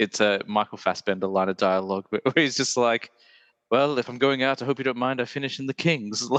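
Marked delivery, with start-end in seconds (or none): 3.7-6.3 put-on curt delivery in a British accent. Quoting a Michael Fassbender line of dialogue to a co-host, in a curt British accent. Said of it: "it's got that very like curt British accent".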